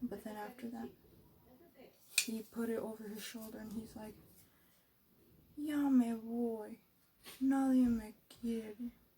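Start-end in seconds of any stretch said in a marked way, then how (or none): 5.6-8.7 drawn-out, very slow, forlorn, sad complaining lament. Retelling what he said as he put it over his shoulder, imitating someone sad. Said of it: "He was all sad about it".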